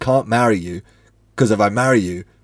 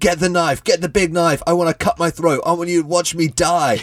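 put-on high-pitched, furious, unhinged screaming outburst; 7 semitones higher than usual. Describing a scene where a character storms out about his brother, retelling his screaming. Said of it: "screaming about his brother and he's saying".

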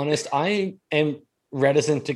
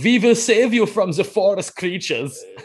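terrible, stumbling put-on German accent, pitched up; 5 semitones higher, 4 dB louder than usual. Imagining an actor stumbling through a German accent: Chris Pratt doing a German accent. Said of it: "I'd very much like to see him do a German".

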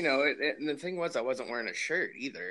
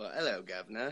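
put-on British accent; 2 semitones lower, 4 dB quieter than usual. A podcast host greets his co-host at the show's start in a put-on British accent. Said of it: "start with a British accent".

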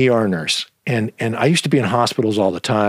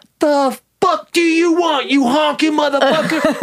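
mock hostile outburst, much higher pitch. Retelling asking a stranger for an address, acting out his hostile outburst. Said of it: "he just starts going off on me".

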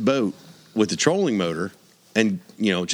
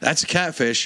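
yelled, calling out, pitched up; 5 semitones higher than usual. Speaker retells yelling back to someone while fishing: retelling a yell. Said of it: "And I yelled back to DK".

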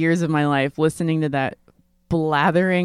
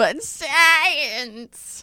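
very high, dry harpy shriek with "science" drawn out; 10 semitones higher than usual. Mocking own skepticism about Bigfoot: mock dry shrieking harpy voice. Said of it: "like a dry, shrieking harpy going".

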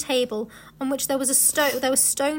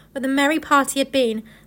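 plain reading voice

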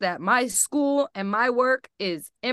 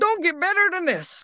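put-on pitched-up, elderly-sounding old-man voice; 6 semitones higher than usual. Quoting a catchphrase as Austin would say it: imitating Austin. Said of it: "as Austin would say".

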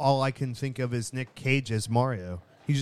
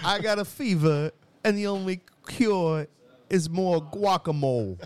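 put-on Spanish accent, higher pitched; 5 semitones higher than usual. Answering a request to hear the actor's Spanish: Christopher Walken doing Spanish accent. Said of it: "Let me hear your Spanish".

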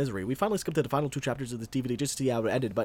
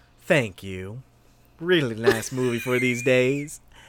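loud put-on American Southern accent; 5 dB louder than usual. Reading a message aloud in a Southern voice. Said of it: "I want to read this one in a southern voice".

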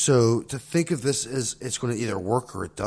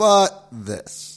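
high, loud mocking but. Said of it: "So it's like".

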